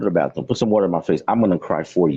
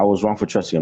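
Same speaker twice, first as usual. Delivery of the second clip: ordinary talk, nothing marked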